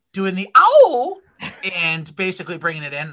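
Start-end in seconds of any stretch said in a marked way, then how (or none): 0.2-1.2 loud voice, breaking and cracking partway through. Opening a podcast episode with co-hosts, voice cracking. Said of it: "My voice just cracked".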